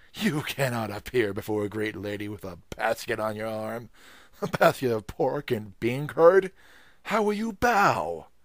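loud, contemptuous, disgusted outcry with rising pitch. A gate man stops a visitor from appearing before the old mistress, crying out in disgust. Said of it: "retorted the gate man, who was polite to none except the rich friends of his master and mistress. / who was polite to none except the rich friends of his master and mistress. I am come, faltered [name".

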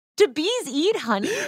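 disbelieving, rising voice.

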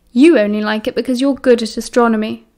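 ordinary delivery

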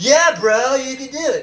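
high surfer bro way of talking. Speaker mocks people who show off their wealth, surfer bro voice. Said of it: "talking like a surfer dude or a surfer bro".

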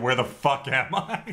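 plain

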